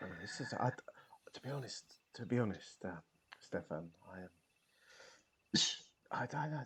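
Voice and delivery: very quiet whisper. Speaking to Stefan while there's noise going on, whispering very quietly. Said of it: "This is what I'm whispering very quietly in your ear".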